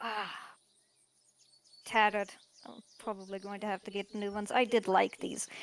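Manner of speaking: low, quiet, grumbling mutter under the breath. Voicing a character looking at his tattered clothes: complaining and muttering. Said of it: "He's going to be complaining and muttering".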